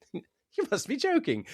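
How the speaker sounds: put-on very high, soft chuckling chortle, British accent. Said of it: "he has a slight chortle and just goes".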